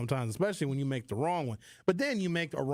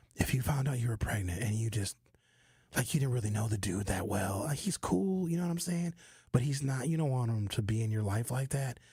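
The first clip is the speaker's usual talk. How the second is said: whispering, lower; 3 semitones lower than usual. Turning to address the ladies directly: whisper voice. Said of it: "I'm gonna use my whisper voice".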